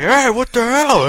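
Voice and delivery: very high, shrill, outraged, angry holler. Retelling a game moment when characters started shouting: imitating people screaming. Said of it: "I hear a bunch of people screaming".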